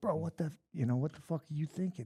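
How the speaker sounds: angry ranting. Retelling chewing out a fighter in the corner: imitating angry chewing-out. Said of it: "letting him have it".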